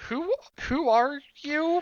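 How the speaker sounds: put-on very high-pitched little girl voice. Voicing a girl who opens the door: voicing a young girl. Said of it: "thirteen-year-old girl at the most".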